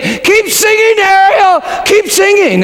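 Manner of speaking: shrill, very high-pitched scream. Retelling how someone yelled at the TV: imitating Becky screaming.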